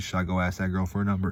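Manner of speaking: ordinary talk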